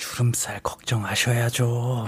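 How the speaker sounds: very soft, low, very quiet whisper. Complaining about her boyfriend's teasing, the speaker quotes him: retelling a whisper. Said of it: "귓속말로".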